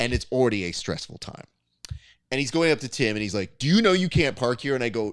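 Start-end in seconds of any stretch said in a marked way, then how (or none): 3.6-4.7 acted, aggressive, hostile tone, pitched up. Retelling what a man said to Tim during unloading: imitating aggressive speaking. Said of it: "when he was like speaking aggressively to us".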